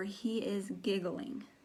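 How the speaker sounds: normal talking voice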